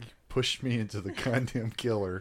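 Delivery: acted-out, loud, upset, aggrieved outburst. Retelling own words after being pushed toward a chainsaw actor: imitating own upset voice. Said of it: "I was upset".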